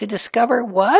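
very high, worried, anxious tone. Reading a story, a character answers a friend's news: anxious. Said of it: "said Piglet anxiously".

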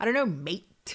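mock petty, bratty, petulant, childish tone. Retelling the reply to why he keeps saying mate, mock-pissy and childish. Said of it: "in that way to be very like pissy, childish".

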